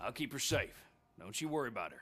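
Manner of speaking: put-on Southern US accent. Speaking to another speaker who then remarks on it: southern accent. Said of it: "why do you have such a southern accent?".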